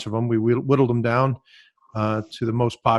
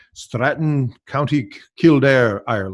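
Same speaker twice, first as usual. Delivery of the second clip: awful, poorly done put-on Irish accent. Introducing a show guest, naming the venue as a friend would, imitating Murphy's Irish accent. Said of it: "which is an awful Irish accent".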